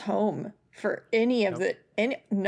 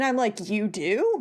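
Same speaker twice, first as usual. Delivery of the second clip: normal talking voice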